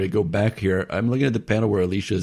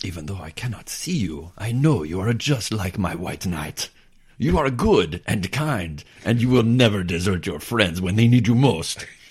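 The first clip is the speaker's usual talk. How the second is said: put-on oddly European, hard-to-place accent. Reading a comic character's line aloud: oddly European accent. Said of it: "Just something oddly European about her".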